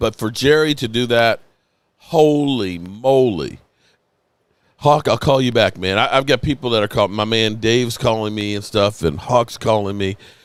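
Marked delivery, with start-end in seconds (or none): 0.0-3.6 slightly choked up, slow, drawn-out moly. Reacting to news about Jerry on a stream: a little emotional. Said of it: "forgive me for being a little emotional".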